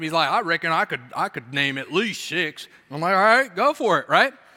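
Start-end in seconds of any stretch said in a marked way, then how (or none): 0.3-2.7 put-on thick Southern accent. Retelling what a southern guy said when challenged, thick southern accent. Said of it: "Southern guy with a thick Southern accent".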